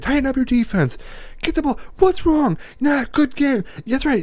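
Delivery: play-acted, shrill, very high hollering. Recalling a man yelling at the kids on the team, retelling a yell at kids. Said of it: "he's yelling at these kids".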